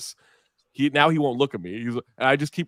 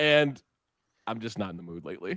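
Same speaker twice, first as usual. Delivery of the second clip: usual speaking voice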